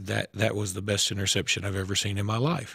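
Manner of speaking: put-on flat monotone. Quoting a guy who saw the game live, in a monotone voice. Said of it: "he said it in a very monotone voice".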